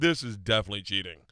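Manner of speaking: plain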